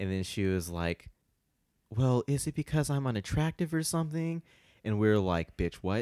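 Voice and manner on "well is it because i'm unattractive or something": softest, smallest, high-pitched little voice. Retelling what a woman said to the group, imitating a very soft voice. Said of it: "she comes out of nowhere with the softest voice".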